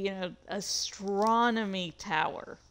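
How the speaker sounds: heavy emphasis on the word astronomy. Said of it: "Emphasis on astronomy".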